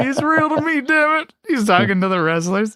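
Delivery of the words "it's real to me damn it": very high-pitched, bawling, crying voice. Recalling a man talking to wrestlers, the speaker quotes him, imitating someone bawling. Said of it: "he's bawling".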